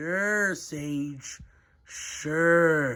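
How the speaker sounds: very slow, soft, dragged-out drawl. Answering a rival's rematch boast, a character replies very slowly. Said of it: "Why are you talking so slow?".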